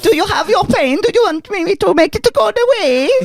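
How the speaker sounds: put-on Swedish accent, very high pitched. Redoing the line after hearing it sounded Swedish, in a put-on Swedish accent. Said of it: "I was doing my Swedish".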